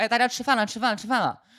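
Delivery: mock, high-pitched hollering call. Retelling a mother calling everyone to dinner from the kitchen: imitating someone shouting. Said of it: "在厨房里面喊说".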